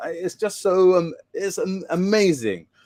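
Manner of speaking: teary, choked-up voice, slow and high. Describing a campfire ritual to listeners, the speaker gets teary: choking up, teary. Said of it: "I'm getting teary now".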